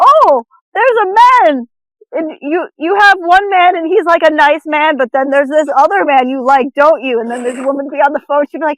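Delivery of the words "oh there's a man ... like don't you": intense, thick put-on Jamaican accent. Imitating a TV psychic's ad: Miss Cleo fake Jamaican accent. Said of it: "intense fake Jamaican accent".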